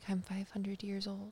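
very hushed, faint, weird whispery echo. Retelling a voice heard in their head, weird whispery echoey voice. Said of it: "weird whispery voice echoey thing in my head".

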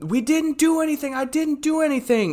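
acted-out frantic scream, very high-pitched. Retelling what a frantic couple held by security screamed, retelling frantic screaming. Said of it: "they were screaming like".

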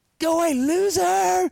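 very high, slow mocking yell. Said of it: "yelling at me".

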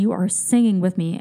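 ordinary delivery

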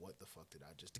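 low, unvoiced whisper.

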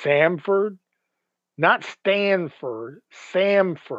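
"Samford" stressed, "Stanford" said slowly.

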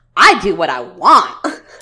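put-on very loud, thick, heavy New Jersey accent. Retelling what a woman said when someone honked at her, strong New Jersey accent. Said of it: "in like the most New Jersey accent".

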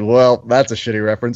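ordinary delivery

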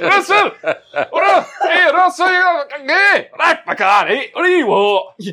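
"m" with put-on Glasgow accent. Imagining M coming back and calling to Russell, in a strong Glaswegian accent. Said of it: "it's like a Glaswegian one".

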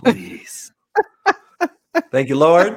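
very loud, deliberate, drawn-out delivery. Retelling a prayer said last night: imitating own prayer. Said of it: "I prayed last night".

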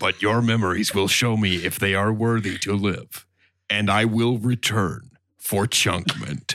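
put-on monster-like voice. As a celestial passing judgment on the people of this planet, speak like [name]'s Cookie Monster impression. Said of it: "That was [name]'s Cookie Monster impression".

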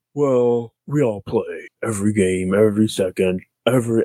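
ponderous big-man voice, each word drawn out slowly. Imitating a coach's reply in an Andre the Giant voice. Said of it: "I don't know why I sound like Andre the Giant".

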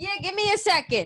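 over-the-top New York Italian accent, very high, swooping. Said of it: "That was so New York accent".

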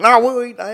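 put-on loud, high, broad-voiced Oklahoma accent. Retelling a late-night pizza run, quoting Justin: imitating Justin's Oklahoma accent. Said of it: "That's why I gave him that accent".

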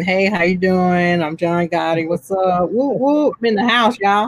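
mock showy, flamboyant tone. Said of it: "He's waving".

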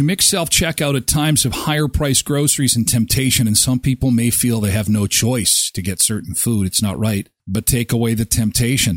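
normal talking voice

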